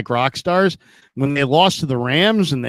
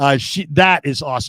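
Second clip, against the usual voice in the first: plain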